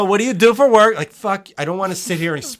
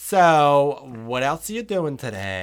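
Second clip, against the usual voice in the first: put-on low, soft, chatty hairstylist accent, "so" drawn out; 4 semitones lower, 5 dB quieter than usual. Complaining about hairstylists making conversation, imitating them in a hairstylist accent. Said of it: "What is this accent, dude?".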